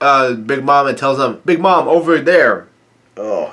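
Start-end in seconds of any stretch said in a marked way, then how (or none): none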